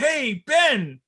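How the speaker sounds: high, loud, corny commercial pitchman voice. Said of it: "doing the I'm the C E O type thing".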